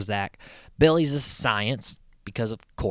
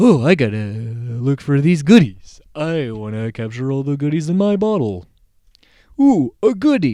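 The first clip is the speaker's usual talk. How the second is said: very loud, dopey, goofy monster voice, look drawn out; 8 dB louder than usual. Recapping an episode, imitating the monster of the week: dumb Mister Tickle Sneezer voice. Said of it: "he has a really dumb voice".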